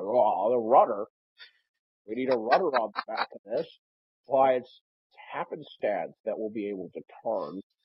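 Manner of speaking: put-on fifty-something older man voice, swooping pitch.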